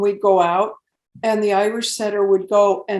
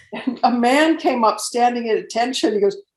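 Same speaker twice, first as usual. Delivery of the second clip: ordinary talk, nothing marked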